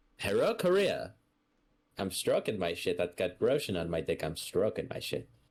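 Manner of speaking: swooping, sing-song official pitch like a broadcast. Presenting a mock message from the leader: Kim Jong-un impression. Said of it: "Now a message from our leader, Kim Jong-un".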